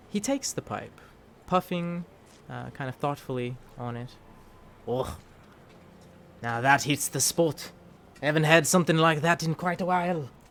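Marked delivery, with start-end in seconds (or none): 4.8-10.2 loud, clumsy, badly done put-on Scottish accent. Playing a character puffing on a pipe: horrible Scottish accent. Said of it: "I have a horrible Scottish accent".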